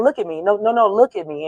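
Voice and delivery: ordinary talk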